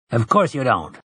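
usual speaking voice

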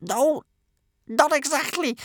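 very high, squeaky, strangled voice. A man being menaced face to face answers, squeaking like a five-year-old. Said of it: "his voice squeaking like a 5-year-old".

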